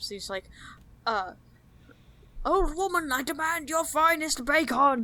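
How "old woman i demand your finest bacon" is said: loud, slow, emphatic dwarf-style voice. Speaker acting out how another player talks, in a loud dwarf-style voice. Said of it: "when he talks dwarf style, it's usually in all caps".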